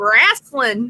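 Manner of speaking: backwoods mountain twang. Showing how backwoods mountain folk say wrestling, backwoods mountain twang. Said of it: "it is definitely wrestling with that twang to it".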